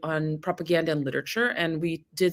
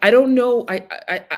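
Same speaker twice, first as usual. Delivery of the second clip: plain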